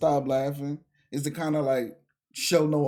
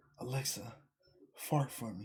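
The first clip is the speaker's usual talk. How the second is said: breathy, drawn-out, slow, very quiet whisper; 4 semitones lower, 13 dB quieter than usual. Retelling how a person asked a smart speaker something: imitating someone whispering. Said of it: "a dude was whispering to his Alexa".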